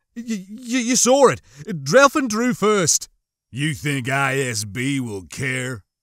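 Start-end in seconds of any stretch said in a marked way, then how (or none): 3.5-5.8 words bitten off sharply. Narrator reading Grave's sharp question in a tense exchange, biting the words out. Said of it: "Grave bit out".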